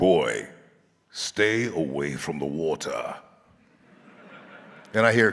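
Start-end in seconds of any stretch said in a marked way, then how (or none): 0.0-3.1 clumsy, not very good put-on British accent. Retelling a first take from voice lessons: not very good British accent. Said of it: "Was that a British accent?".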